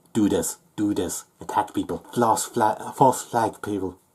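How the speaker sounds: plain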